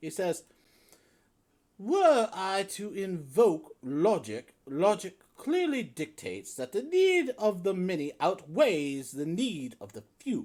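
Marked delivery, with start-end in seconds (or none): 1.8-10.5 prissy, very prim, high voice with precise enunciation. A game master voices a character in a tabletop scene: very prim voice. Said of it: "he says in a very prim voice".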